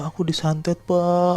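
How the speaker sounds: put-on hard crying, high, slow, words through sobs. Retelling what a possessed person cried to a man, imitating someone sobbing hard. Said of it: "Oh nangis kejer banget".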